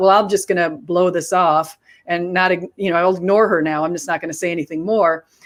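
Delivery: normal talking voice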